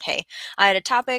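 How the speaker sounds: normal talking voice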